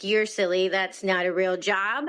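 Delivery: normal talking voice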